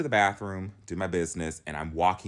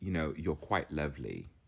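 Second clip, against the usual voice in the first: hushed, soft, posh, polite put-on English accent; 4 semitones lower, 8 dB quieter than usual. Speaker retells a man's compliment after hearing about the royal content: put-on english accent. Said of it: "again, I'm not doing the accent justice".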